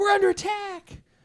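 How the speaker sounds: very high, alarmed, panicked shout. Voicing a young lady who sees concrete burst near her: panicked shout. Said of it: "She's like".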